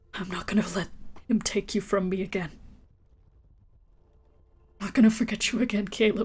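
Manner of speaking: private utterance said only to oneself. In a tabletop game, a character quietly utters words to the players' characters, hushed. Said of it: "just quietly utter out".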